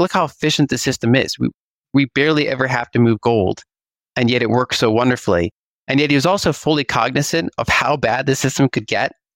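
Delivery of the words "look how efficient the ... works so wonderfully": normal talking voice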